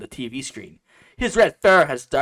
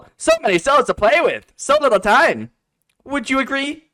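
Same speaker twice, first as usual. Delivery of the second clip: very high, loud cartoon hero voice, pushed up; 13 semitones higher, 5 dB louder than usual. Reading a text message aloud after being told to read it like Sonic. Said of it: "you gotta read it like Sonic".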